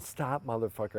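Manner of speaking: ordinary talk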